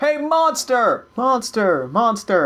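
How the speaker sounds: baiting, full-voiced, loud, high, drawn-out call. Voicing a leader mocking a warning, calling the monster: loud calling out. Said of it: "real loudly calling him out".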